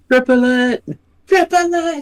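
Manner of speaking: thrilled, excited shriek, very high. In character, answering how much powder to load: excited screaming. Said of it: "Just screaming".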